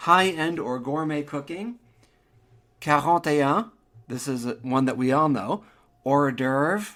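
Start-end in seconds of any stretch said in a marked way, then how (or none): 6.0-7.0 put-on American accent with Americanized pronunciation. Comparing French and English pronunciations of a phrase, in an American accent. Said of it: "Hors d'oeuvre with an American accent".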